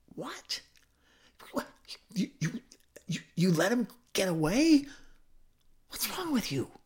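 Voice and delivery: high, disbelieving outcry. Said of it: "The men are going".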